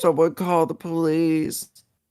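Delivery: put-on scared crying voice. Acting out someone hiding and livestreaming in fear: mock crying as John Cuck. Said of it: "He'd cry and fucking live stream it".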